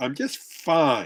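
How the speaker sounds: resentful tone, clearly not fine. Showing how a partner says they are fine: tone saying not fine. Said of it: "The tone is saying, "Not fine at all."".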